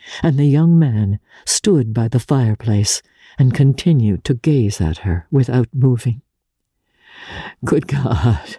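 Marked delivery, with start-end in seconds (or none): 7.7-8.6 with a groan. A young man by the fireplace, gazing at the woman, groaning. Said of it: "He groaned".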